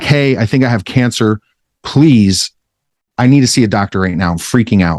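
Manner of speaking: put-on tearful, crying pleading voice. Retelling a phone call begging the receptionist to see a doctor: imitating own past crying plea. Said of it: "crying my eyes out".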